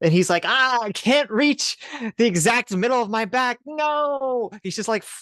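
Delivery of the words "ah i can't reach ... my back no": high, slow, comical cartoonish whiny voice. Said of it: "comical, like, cartoonish scene".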